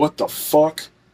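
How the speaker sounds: jolted, shocked, startled exclamation. Someone retells hearing a voice in their ear while falling asleep, retelling a startled outburst. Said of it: "And I jumped".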